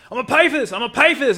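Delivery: mock very high, shrill hollered yelling. Retelling a story about a man at a store counter: imitating a man yelling.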